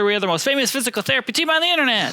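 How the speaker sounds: rattled off very fast.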